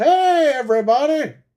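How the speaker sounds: very high, cartoon-style voice, pitched way up. Showing how a YouTuber talks, like Doctor Nick: imitating Doctor Nick from The Simpsons. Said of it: "He purposely talks like that guy".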